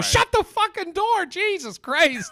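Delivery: put-on, very high, blurted-out outburst. Retelling walking in on someone while groggy: retelling a blurted outburst. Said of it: "I just blurted out".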